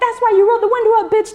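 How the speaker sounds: very high, fast mock furious yelling.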